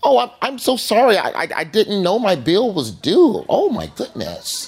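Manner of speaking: put-on polite, proper voice, high, very slow.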